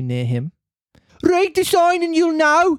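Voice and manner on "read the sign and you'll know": put-on English Dudley accent. Reading a story aloud, voicing a little boy, as asked: little boy with Dudley accent. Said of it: "a little boy from Birmingham?".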